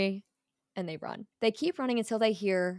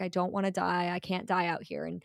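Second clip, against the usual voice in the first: mock whimpering and crying. Retelling a game scene, the speaker voices Dom hiding in a bush, mock whimpering. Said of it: "Dom is kind of crying here. He's whimpering".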